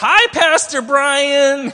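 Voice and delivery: very high, very loud hollered shout. A pastor retells how kids from his church greeted him at school, really loud. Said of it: "they would say really loud".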